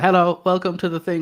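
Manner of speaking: put-on deadpan monotone. Recalling early video content, speaker mimics past self, imitating a deadpan delivery. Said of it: "everyone instantly goes deadpan and I was like".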